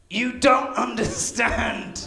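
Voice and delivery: mock, high, tortured, really upset voice. Speaker retells a man's tortured-sounding complaint, imitating someone upset. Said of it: "he sounds really upset".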